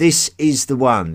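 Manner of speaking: loud, high, belted all-caps style delivery. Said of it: "in capital letters".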